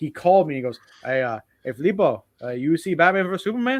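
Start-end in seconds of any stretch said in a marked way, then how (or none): 1.0-3.8 put-on heavy Mexican accent, laid on thick. Retelling a best friend's phone call about his favorite movie, Tito's thick Mexican accent. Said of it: "very thick accent".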